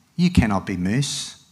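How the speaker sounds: ordinary delivery, nothing marked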